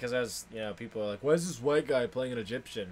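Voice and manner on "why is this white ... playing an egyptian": usual speaking voice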